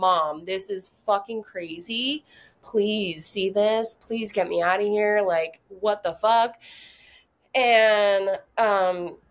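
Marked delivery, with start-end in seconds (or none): 0.0-6.6 put-on begging, pleading tone. Retelling praying to mom to get out: imitating own begging. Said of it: "I would just beg my mom".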